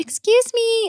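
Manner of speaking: tiny, very high, prim little voice. Recalling a woman on the subway who said this, in a little voice. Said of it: "like in that little voice".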